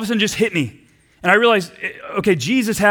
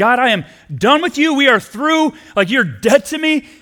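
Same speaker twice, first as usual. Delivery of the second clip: play-acted furious outburst, only half-voiced; 4 semitones higher than usual. Retelling shouting at God during a dark season: imitating own past shout. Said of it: "one day I just shouted".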